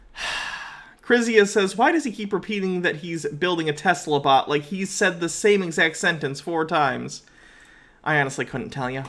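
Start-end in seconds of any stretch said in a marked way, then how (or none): none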